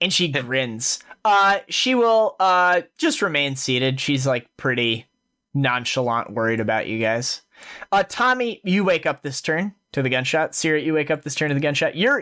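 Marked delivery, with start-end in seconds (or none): 10.5-11.9 fast, rattled-off delivery. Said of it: "GM repeating for second player".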